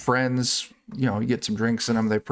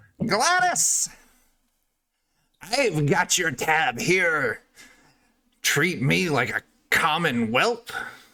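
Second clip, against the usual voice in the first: high, cackling voice; 6 semitones higher than usual. A game master voices someone calling to gladys from outside, cackling voice. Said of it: "you hear a cackling voice from outside".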